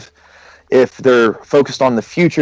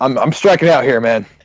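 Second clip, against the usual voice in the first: usual speaking voice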